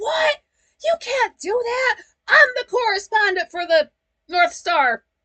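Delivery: loud, high, play-acted indignant pissed-off outburst. Retelling a character's protest as he gets pissed off: imitating an angry Kipling. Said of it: "So he's just pissed off".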